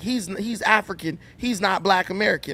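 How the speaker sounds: normal talking voice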